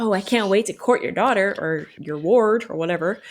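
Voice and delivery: ordinary talk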